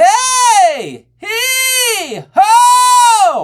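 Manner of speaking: very high, loud closed belt. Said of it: "for a more closed belt".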